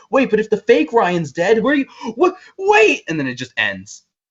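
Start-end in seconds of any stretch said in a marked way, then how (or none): 0.1-3.0 frantic, high-pitched, panicked babble. Retelling a podcast ending after a gunshot: imitating someone freaking out. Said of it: "starts freaking the fuck out".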